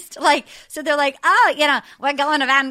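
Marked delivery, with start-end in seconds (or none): 1.2-2.7 bad put-on Australian accent. Imitating Australian travelers on a round-the-world party tour: offensive Australian accent. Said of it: "here's my newest offensive accent".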